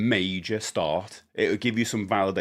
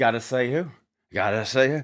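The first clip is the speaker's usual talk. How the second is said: put-on Australian accent; 3 semitones higher than usual. Retelling how a man said a phrase, in a put-on australian accent. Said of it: "it was Australian".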